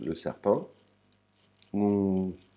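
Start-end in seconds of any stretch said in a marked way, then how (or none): 1.7-2.3 ngu said with a descending, falling tone. Glossing words in French, the speaker gives a falling pitch on ngu. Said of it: "c'est le son ngue avec une intonation qui descend".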